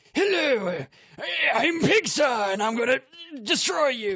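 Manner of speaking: very high, strained put-on voice, tight from the larynx. Demoing a voice that is hard on the throat: strained throaty put-on voice. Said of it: "it's this very strained thing that I do with my, I don't know, larynx".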